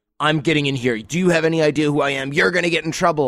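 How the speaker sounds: put-on self-important, entitled, demanding big-shot bluster. Imitating partygoers who demand entry at the door: imitating an entitled, demanding partygoer. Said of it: "they try to go Hollywood".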